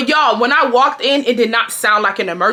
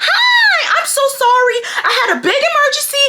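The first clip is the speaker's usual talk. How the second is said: very high, slow, drawn-out fake sweetness. Retelling how a manager greeted a customer: imitating a fake sweet act. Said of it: "She puts on the fake act".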